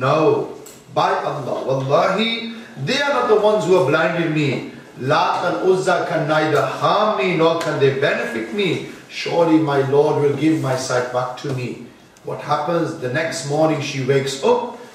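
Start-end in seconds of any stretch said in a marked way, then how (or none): none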